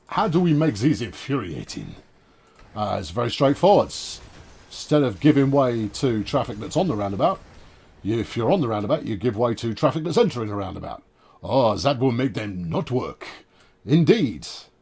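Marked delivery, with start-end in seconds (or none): 11.4-14.4 rough, loose, put-on French accent. Joking while explaining roundabout rules, sort-of French accent. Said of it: "that's a French accent, sort of".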